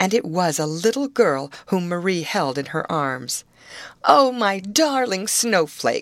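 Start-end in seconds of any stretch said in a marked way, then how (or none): 4.0-6.0 tender, loving exclamation. An old woman greets Snowflake, now a little girl: crying out. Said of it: "cried the old woman".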